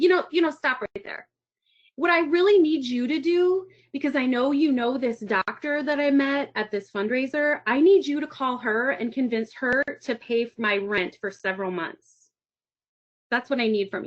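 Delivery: plain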